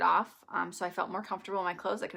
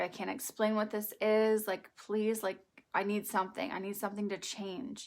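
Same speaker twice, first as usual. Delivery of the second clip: tearful voice, speaking as if crying. Retelling a past prayer while rocking her daughter to sleep: retelling a tearful plea. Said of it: "I was just crying, like".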